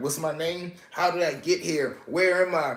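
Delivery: put-on dazed, lost confusion, high and bewildered. Retelling how an inmate acted like he didn't know who he was: imitating someone acting confused. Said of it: "acting like he ain't know who he was".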